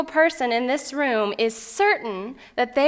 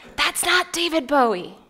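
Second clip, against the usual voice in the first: re-enacted whisper, higher pitch; 3 semitones higher than usual. Retelling whispering back to James in a movie theater; retelling a whisper. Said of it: "I whispered back".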